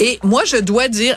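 plain

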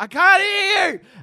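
put-on, shrill, very high, drawn-out yell. Speaker retells yelling at a girl while wearing silent-disco headphones, retelling a yell. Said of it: "And I'm just yelling at this girl".

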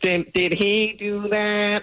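very high, very slow character voice. Doing the catchphrase again as asked, changed wording: Urkel voice. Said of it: "do it again, [name], but change it".

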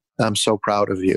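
ordinary delivery

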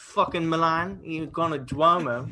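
put-on Italian accent. A podcast host riffs about a bloke who has never been there: fake italian accent. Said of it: "He has a pretty good accent".

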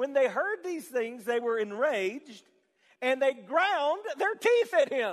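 talking through laughter. Reading a Bible verse aloud to listeners: laughing while reading. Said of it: "I can't even say this without laughing".

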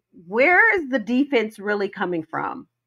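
plain

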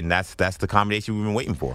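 ordinary talk

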